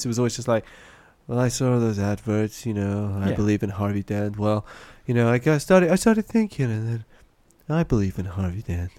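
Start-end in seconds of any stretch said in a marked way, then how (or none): 1.3-8.9 play-acted drowsy, very slow, drawn-out voice. Describing how someone always sounded and acting out his words, imitating a sleepy voice. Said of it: "that kind of sleepy quality to his voice".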